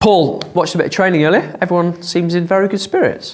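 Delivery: surprised tone. Interviewer telling the head coach about watching training earlier, sounding surprised. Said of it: "you sound surprised".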